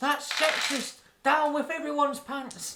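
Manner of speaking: very high, loud shout from the crowd. Voicing someone in a crowd who shouts a protest: shouting crowd member. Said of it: "And someone shouts".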